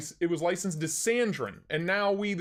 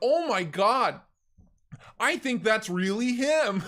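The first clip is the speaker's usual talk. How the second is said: high, loud yell at the top of the lungs; 5 semitones higher, 4 dB louder than usual. Recalling a friend recognizing the speaker from YouTube: retelling a yell. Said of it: "just yell it at the top of his lungs. He's like".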